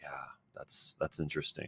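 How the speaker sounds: very quiet, low, subdued, gloomy and morose. Recording a voice sample showing different feelings, now subdued and morose. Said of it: "be a little bit more subdued and be a little bit more".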